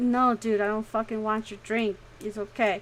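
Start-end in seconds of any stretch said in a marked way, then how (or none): none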